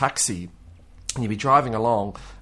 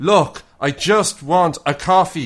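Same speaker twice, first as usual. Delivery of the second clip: put-on grumpy, cranky old Irish man voice, pitch raised; 7 semitones higher, 8 dB louder than usual. Speaker retelling how they talked to her, in an old Irish man voice. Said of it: "turning into like an Irish old man".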